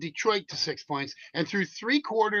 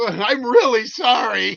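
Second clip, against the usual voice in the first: mock giggly, high, raised voice through laughter; 5 semitones higher, 6 dB louder than usual. Retelling how a girl apologizes while smiling: imitating a laughing apology. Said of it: "And she starts smiling and laughing".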